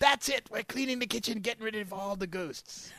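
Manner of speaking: high-pitched, commanding TV chef voice. Riffing with others on a show, continuing a Gordon Ramsay impression. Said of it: "like Gordon Ramsay, and says".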